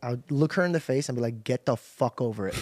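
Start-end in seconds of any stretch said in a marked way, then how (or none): 1.4-2.6 mock blunt, unkind, harsh, dismissive tone. Retelling what was said to a sister: imitating own unkind retort. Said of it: "I didn't say it a kind way".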